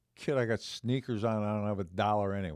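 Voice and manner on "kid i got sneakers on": ordinary delivery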